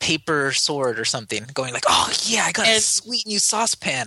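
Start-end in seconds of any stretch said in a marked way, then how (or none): 1.9-4.1 mock excitement, higher pitch. Acting out finding new homemade loot in a game: acting excited. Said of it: "getting excited when I see a new saucepan".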